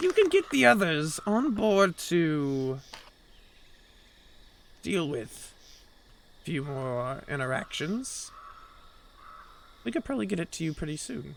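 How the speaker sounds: secretive whispered delivery. Voicing a character who whispers an offer to the players: whispering NPC. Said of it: "you hear him whisper".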